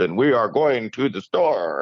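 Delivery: put-on 1940s film old Hollywood transatlantic accent. Explaining how 1940s film actors talked, the speaker demonstrates: 1940s film transatlantic accent. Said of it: "they're always talking like this".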